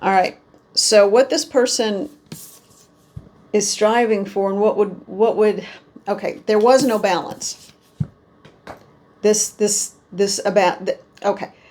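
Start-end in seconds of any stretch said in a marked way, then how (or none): 4.5-11.5 stammering, stuttering, tripping over words. Reader interpreting the Magician card, stuttering. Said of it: "because I'm stuttering".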